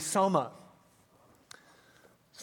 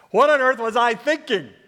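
higher, louder incredulous cry. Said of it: "with a hideous sense of incredulity going".

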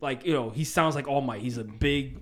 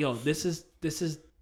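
ordinary delivery

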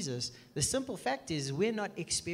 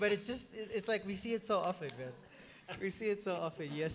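words breaking up with laughter while talking. Reacting to a joke another speaker just told: laughing while talking. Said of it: "I'm laughing more than I should".

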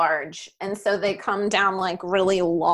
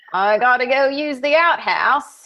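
loud, high, put-on Australian accent; 5 semitones higher, 6 dB louder than usual. Joking about having to go use the outhouse: Australian accent. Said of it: "That was Australian".

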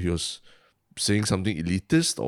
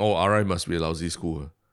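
ordinary talk

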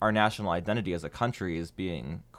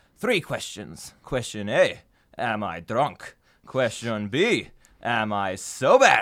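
slow, drunk-sounding put-on Italian accent; 3 semitones higher than usual. Playing the drunk schoolteacher in a play, saying one of the lines; italian accent. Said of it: "That's way better than my Italian accent".

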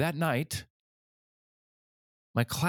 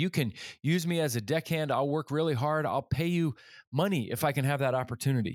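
ordinary talk

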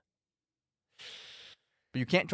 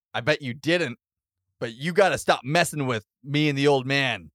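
plain

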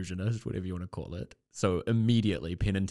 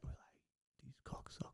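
breathy, whispered tough-guy voice. Showing a celebrity impression to the other speaker: Robert De Niro impression. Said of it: "That's my impression of Robert De Niro".

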